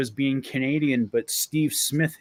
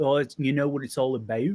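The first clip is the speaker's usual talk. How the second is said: put-on English accent. Speaker showing how they could talk, in an English accent. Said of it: "English accent and".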